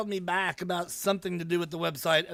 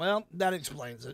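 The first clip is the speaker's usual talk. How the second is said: ordinary talk, nothing marked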